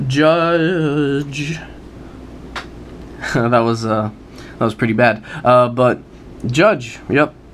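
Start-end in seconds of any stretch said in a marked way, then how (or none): 0.1-1.6 over-the-top dramatic reveal with long rising finish. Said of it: "I'm laughing over my horrible performance".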